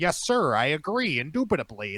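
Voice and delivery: put-on stiff, formal tone. Making fun of a guy who changes how he talks on the phone: mocking his formal voice. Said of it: "I used to make fun of him".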